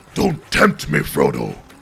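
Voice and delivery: very low, rough, creaky, raspy growl. Talking to the game while playing it, Gandalf impression. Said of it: "That's my Gandalf impersonation".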